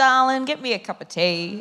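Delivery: very broad ocker Australian. Showing how the term darling is often said, in a broad ocker Australian accent. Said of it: "in the very ochre Australian accent".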